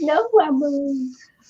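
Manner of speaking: put-on little Scottish accent. Quoting a boy from a video, in a wee Scottish accent. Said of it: "in his wee Scot Scottish accent".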